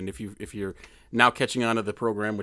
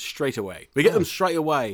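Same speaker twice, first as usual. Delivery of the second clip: fake English accent, pitched up; 5 semitones higher, 4 dB louder than usual. Saying how they say it in England: put-on English accent. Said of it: "We're going back to accents again".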